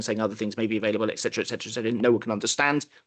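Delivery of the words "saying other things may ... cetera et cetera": very fast, very deep, rattled-off radio-ad disclaimer voice. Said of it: "someone with a really fast voice and a really deep voice going".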